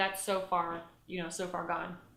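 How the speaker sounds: normal talking voice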